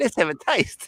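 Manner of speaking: put-on Australian accent, lisping, pitched high. Mimicking another speaker's impression of a cooking host: imitating an Australian accent with a lisp.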